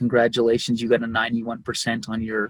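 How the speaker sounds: ordinary delivery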